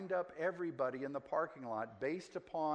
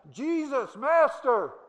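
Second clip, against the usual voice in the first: very loud, very high calling out; 11 semitones higher, 14 dB louder than usual. Retelling how a man standing afar off called out to Jesus: retelling a loud cry. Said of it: "he had to be loud to be heard, and he cries out".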